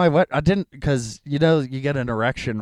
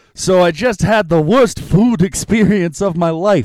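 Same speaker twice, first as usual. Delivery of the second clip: put-on loud New York accent, pitched up; 6 semitones higher, 6 dB louder than usual. Performing a written joke for the audience, in a New York accent. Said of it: "wrote this joke in a New York accent".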